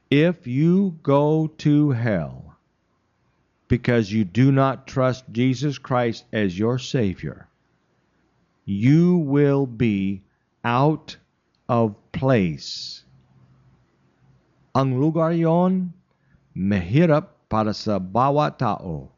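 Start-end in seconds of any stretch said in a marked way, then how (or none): 0.1-13.0 slow, clear, deliberate, each word distinct. Speaking about hell, the speaker asks listeners to listen carefully: slow and clear. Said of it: "I will speak slowly, clearly".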